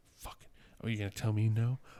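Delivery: put-on muttering under the breath. Recalling watching The Martian again at home: imitating muttering under breath. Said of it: "I'm just like murmuring under my breath".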